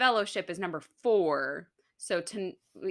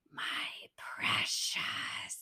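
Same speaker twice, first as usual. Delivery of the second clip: hushed, breathy whisper, close and soft; 10 semitones lower, 9 dB quieter than usual. Retelling how a child whispers in their ear: whispered Gollum voice. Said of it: "whispering in my ear".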